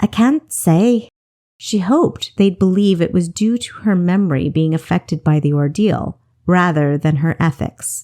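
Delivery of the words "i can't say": wispy, faint, stammering voice, higher pitched. Reading a reply that a character gives after an ordeal: wispy voice, stuttering a bit. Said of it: "Stuttering a bit, she replied in a wispy voice".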